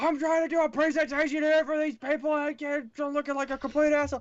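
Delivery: very high, furious, angry screaming rant. Retelling a presenter leaving to confront a man: retelling a scream. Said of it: "he's like screaming at the guy".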